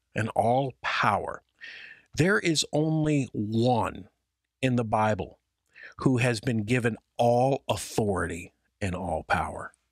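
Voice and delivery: ordinary talk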